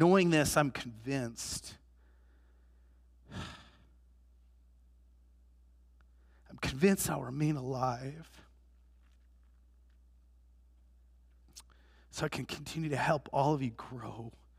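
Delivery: speaking through tears. Addressing the listeners, crying. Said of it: "Don't ask me why I'm crying".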